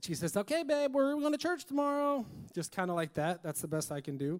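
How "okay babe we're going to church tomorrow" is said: bright, chirpy, very high voice, spoken quickly. Retelling what she said on coming up to the speaker, imitating a chirpy voice. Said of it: "comes up to me in a chirpy voice".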